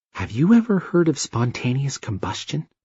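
secretive, confiding, hushed conspiratorial whisper. Reading a story aloud, the narrator gives Amy's line: low conspiratorial whisper. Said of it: "then said in a low conspiratorial whisper".

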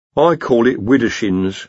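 ordinary delivery

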